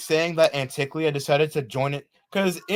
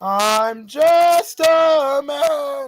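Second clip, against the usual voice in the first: cracking, breaking voice, very high and slow; 10 semitones higher, 4 dB louder than usual. Speaking when the voice suddenly breaks: voice cracking. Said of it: "it's me voice cracking".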